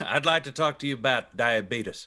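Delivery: put-on voice of a very old man. Joking as a very old man character: Wilfred Brimley voice. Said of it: "he's just Wilfred Brimley".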